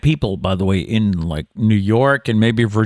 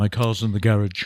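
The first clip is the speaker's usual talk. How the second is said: quieter speech with English pronunciation; 4 dB quieter than usual. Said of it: "like [name] would say garage".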